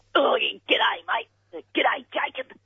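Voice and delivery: comic bloke character voice, pining and lovesick.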